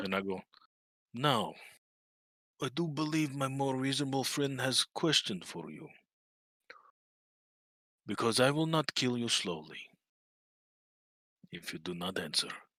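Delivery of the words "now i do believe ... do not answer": quiet, intimidating, menacing tone. Threatening a captive in character to force answers: intimidating threat. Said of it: "I'm gonna roll an intimidation".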